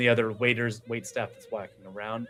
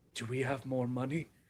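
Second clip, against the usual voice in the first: very quiet, hushed, leaning-in half-whisper; 11 dB quieter than usual. Voicing an NPC who leans over to another: half-whispering as an NPC. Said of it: "lean and whispers".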